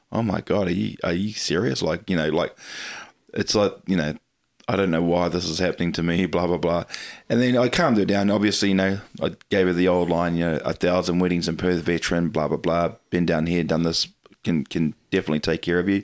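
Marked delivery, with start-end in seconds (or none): none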